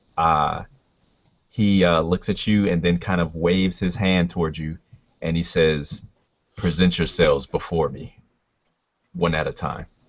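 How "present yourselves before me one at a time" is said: calm, low voice resonating from the chest. Voicing a king who addresses those in front of him: calm, low, almost quiet voice. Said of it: "a calm, low, almost quiet voice".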